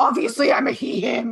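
put-on angry retort. Imitating a person who reacts to a basic question: imitating an angry reaction. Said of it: "You seem angry".

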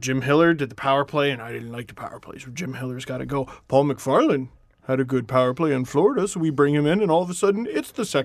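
put-on dumb, dim-witted voice. Speaker acts out their own thinking to the others, in a dumb brain voice. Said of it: "That's my dumb brain voice".

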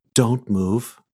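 whispering. Narrating a game, a cast member holds a sword to a player's neck, whispering. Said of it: "leans forward and whispers to you".

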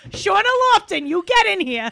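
angry, yelling mother voice with New Jersey accent. Calling someone's name the way an italian mom does, imitating an angry italian mom. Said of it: "like when your Italian mom's mad at you".

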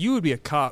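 grave, completely serious, low-pitched delivery. Joking with the other podcast host about past lives: said very seriously. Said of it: "He said that so serious".

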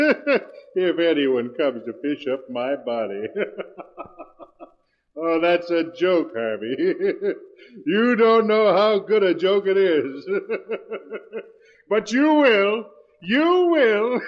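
talking through a fit of laughing. Taunting two people who are about to push him down a well: laughing while talking. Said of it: "make him stop laughing".

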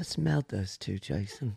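put-on British accent. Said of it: "Why did you become British for that advice?".

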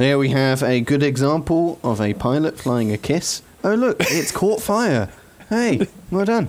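broadcast announcer, play-by-play commentator delivery. Describing how they'll commentate a pilot's flying: commentator voice. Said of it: "as a commentator voice".

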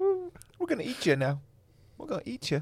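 very high, cheeky, sassy wolf voice. Telling a story, the speaker acts out what the wolf would say: sassy wolf voice. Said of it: "why is that wolf so sassy?".

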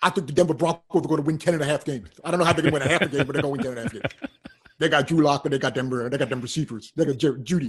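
deep, low put-on voice, borrowed delivery. Doing an impersonation for co-hosts talking football: Shannon Sharpe impression. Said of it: "you did Shannon Sharpe".

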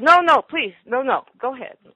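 mock frightened, panicked pleading. Retelling a soaked man refusing a ride in the cab: imitating a terrified man. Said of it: "He was the picture of terror".

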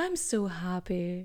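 gloomy, miserable, saddest possible voice. Speaker repeats her own words to her readers in a mock-sad voice. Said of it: "she said in the saddest voice".

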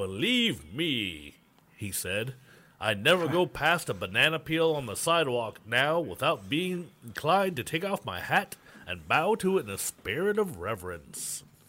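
put-on old-fashioned, bygone-era delivery. Podcast host quoting a man's remark, in an old timey voice. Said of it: "I'll try to do my old timey voice again".

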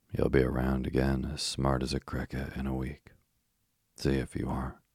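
usual speaking voice

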